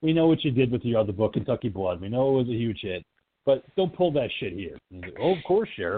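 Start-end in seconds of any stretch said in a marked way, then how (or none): 5.2-6.0 acted-out snooty, self-assured tone, higher pitched. Retelling a scene, acting out the writer answering the sheriff in a mock-snooty tone. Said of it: "he's got that snooty tone of a writer".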